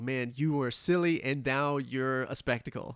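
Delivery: ordinary talk, nothing marked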